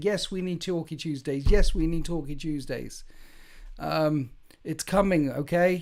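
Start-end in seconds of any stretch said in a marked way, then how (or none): 0.0-3.0 mock, insistent, badgering shout, repeated over and over. Imitating others pressuring about Talky Tuesdays: imitating someone shouting. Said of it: "Why are you shouting and shouting and saying".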